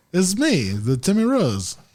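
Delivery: put-on, mock German accent. Friends improvising a commercial and trying out accents: fake German accent. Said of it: "you got to do the ziz".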